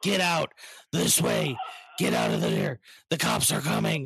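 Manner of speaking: gruff, rough, creaky voice. Retelling how you directed people out in costume when the cops showed up, in a Batman voice. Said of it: "directing people out in the Batman voice".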